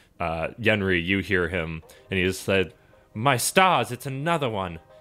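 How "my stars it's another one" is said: high, squeaky little mouse creature voice. Voicing a mouse minstrel greeting the players: squeaking mouse voice. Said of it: "he starts squeaking at you".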